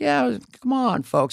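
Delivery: gentle creaky high voice. Imitating a president speaking gently: gentle Joe Biden impression. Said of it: "He was very gentle".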